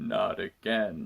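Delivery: very low, deep, rough, raspy actor voice. Voicing the boss answering a phone call about a problem, Patrick Stewart impression. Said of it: "That's my Patrick Stewart impression".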